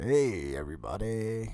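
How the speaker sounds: chopped-sounding, broken-up voice. Joking about a worn-out voice, greeting everyone: Wolfman Jack voice. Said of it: "I sound like fucking Wolfman Jack".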